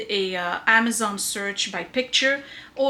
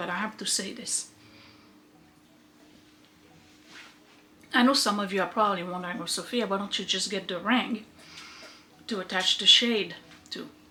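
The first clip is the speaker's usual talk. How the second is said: talking with mouth full, chewing, quieter; 4 dB quieter than usual. Taking a snack break and answering viewers' question, talking while chewing. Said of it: "Sorry for chewing".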